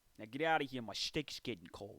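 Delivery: put-on New York accent. Telling someone to get out during a comedy bit, in a new york accent. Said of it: "Gotta get that New York vibe in".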